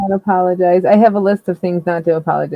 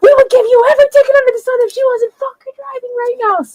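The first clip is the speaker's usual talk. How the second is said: put-on drunken, loud screaming, pitched high; 5 dB louder than usual. Retelling drunk passengers yelling at police, imitating drunk screaming at cops. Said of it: "screaming in their faces between the cops".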